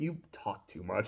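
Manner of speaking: hushed, put-on flat, stone-faced whisper. Retelling a scene where Fern cuts off a rambling villain: Fern, stone-faced deadpan. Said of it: "stone face".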